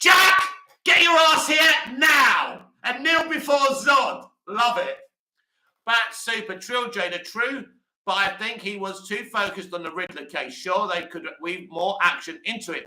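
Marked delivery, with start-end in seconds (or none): 0.0-4.3 loud, slow, booming, commanding acted villain voice. Retelling how the actor who played Zod called Jack over, in loud Zod voice. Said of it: "in his loud Zod voice".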